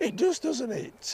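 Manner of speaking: high, slow, squeaky voice.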